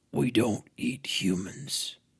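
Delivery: deep, raspy creature voice. Reading a story where Sasquatch speaks: deep, raspy Sasquatch voice. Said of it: "With a deep, raspy voice, Sasquatch said".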